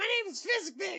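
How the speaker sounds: very high-pitched creature voice of a goblin. Telling a friend about a goblin he owned in college, quoting it in goblin voice. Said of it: "I appreciate your goblin voice".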